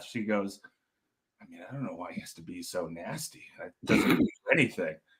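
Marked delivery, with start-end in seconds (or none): 1.4-4.9 put-on muttering under breath, lower and quieter. Retelling how a desk clerk complained about a caller: imitating someone muttering under breath. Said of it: "mutter under her breath".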